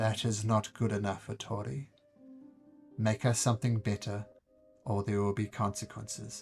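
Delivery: simple, flat, level, even-toned threatening monotone. Imitating disgusted diners addressing Tori, in a level threatening monotone. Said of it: "they talk to you in a very simple monotone".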